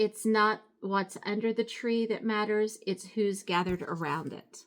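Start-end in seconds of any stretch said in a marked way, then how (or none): none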